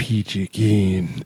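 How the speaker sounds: put-on furious voice. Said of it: "the angriest voice".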